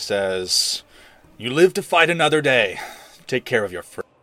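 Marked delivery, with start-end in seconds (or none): 1.4-4.0 words growled out. Game master voicing Snow, near death, addressing Azrael and Briar: Snow growling. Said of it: "And he growls".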